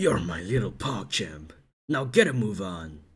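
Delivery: deep video game character voice. Joking about being hired for voice acting, delivering a deep game character voice line. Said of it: "like a game character voice line".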